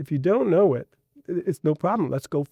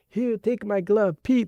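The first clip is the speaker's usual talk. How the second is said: full put-on Cuban accent, pitched up; 5 semitones higher than usual. Retelling a neighbor's words to a kid, imitating a Cuban accent. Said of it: "with his Cuban accent".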